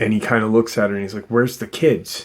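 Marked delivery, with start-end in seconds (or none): 1.3-2.3 mock hard, sharp, stern, aggressive delivery. Retelling a husband demanding where the kids are: imitating a stern demand. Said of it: "really sternly".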